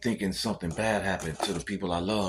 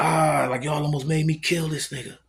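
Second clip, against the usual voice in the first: raised, high-pitched scream from the gut; 8 semitones higher, 6 dB louder than usual. Retelling the same man screaming again: imitating someone screaming.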